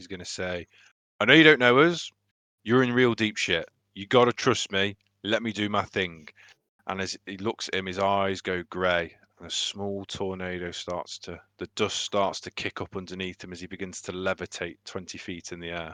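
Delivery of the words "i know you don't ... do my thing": loud, called-out shout in a character voice. Voicing a character who shouts to a stranger to trust him: shouting in character. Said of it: "he's gonna shout to this unknown person".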